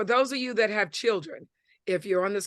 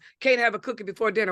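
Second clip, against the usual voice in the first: plain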